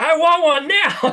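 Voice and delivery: eager begging voice, high, slow and loud. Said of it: "people are always like".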